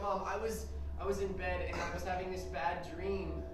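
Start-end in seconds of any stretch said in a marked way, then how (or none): none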